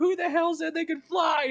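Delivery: loud, piercing, very high, shrill ear-splitting shriek. Retelling a meme about a guy on voice chat: imitating an ear-splitting scream. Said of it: "he lets out this ear-splitting scream".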